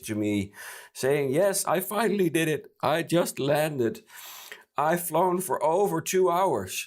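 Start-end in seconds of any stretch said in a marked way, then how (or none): 1.3-6.9 high, joyful, happy, frantic screaming. Retelling an unexpected call from an unknown number: imitating happy frantic screaming. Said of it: "screaming in a very happy, frantic voice".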